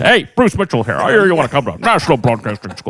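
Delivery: professional radio announcer voice with swooping pitch. Act out the man calling you up about the broadcasting school, in Bruce Mitchell's real radio voice. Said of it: "He had the real radio voice".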